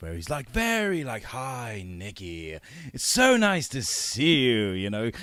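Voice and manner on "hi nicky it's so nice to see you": camp, theatrical English accent, very slow and drawn out. Speaker recalls the accent Ash gave them to work with: imitating Ash's flamboyant English accent. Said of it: "really flamboyant English accent".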